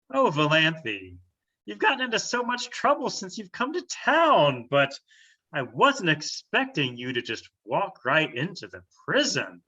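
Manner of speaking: swooping woman's voice, drawn-out "town". Game master voicing a woman who recognizes Valanthe at the prison: voicing a woman NPC. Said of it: "And she says".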